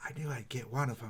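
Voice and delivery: very quiet, hushed half-whisper. Retelling how a man walked by and spoke behind someone's ear, half-whispering. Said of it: "kind of whispers behind your ear".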